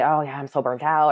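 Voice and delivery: ordinary delivery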